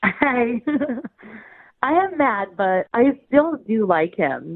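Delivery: words broken up by laughing. Caller tells the radio hosts she's mad but still likes him, laughing while talking. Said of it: "you sound like you can't stop laughing".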